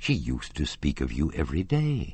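ordinary delivery

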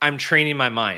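mock flat, deadpan delivery. Retelling the speaker's own answer to a woman met outdoors; retelling a deadpan reply. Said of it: "like deadpan".

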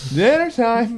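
very high-pitched mother's yell. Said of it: "it's like yelling".

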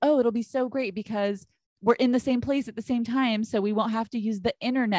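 ordinary talk

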